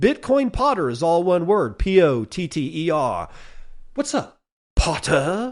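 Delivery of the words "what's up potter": bad, fake, put-on English accent. Speaker plugging the Bitcoin Potter shop name as a joke: terrible Harry Potter English accent. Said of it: "that's my terrible English accent".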